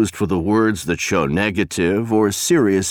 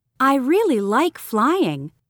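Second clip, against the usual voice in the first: bright, upbeat, positive delivery at higher pitch. Pronunciation exercise example sentence, positive, higher bright tone.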